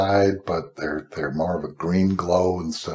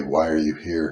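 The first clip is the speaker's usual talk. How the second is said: great, big, resounding, booming voice; 3 semitones lower than usual. Retelling what a great voice asked on a rubble-strewn path: great booming voice. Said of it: "this great booming voice say".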